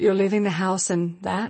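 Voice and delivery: low, flat, level robot monotone, machine-like. Voicing an imagined high-tech fashion mirror: Anna Wintour robot voice. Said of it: "saying in a monotone robot voice".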